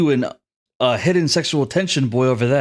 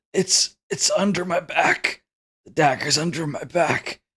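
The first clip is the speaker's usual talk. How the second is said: effortful, straining speech; 3 semitones higher, 3 dB quieter than usual. Voicing a hurt character saying where the dagger is: strained voice. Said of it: "he says strainedly".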